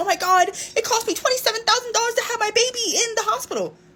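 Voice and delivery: high-pitched, tearful, sobbing crying voice. Mocking how people act, imitating someone crying. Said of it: "Y'all be like legit like crying like".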